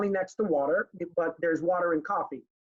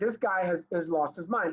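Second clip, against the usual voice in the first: ordinary delivery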